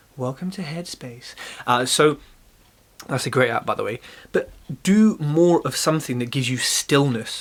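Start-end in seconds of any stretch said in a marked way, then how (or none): 0.2-1.4 soft, calm, soothing meditation-style narration. Speaker talking about meditation puts on a calm meditation voice. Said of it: "Putting on my calm voice now".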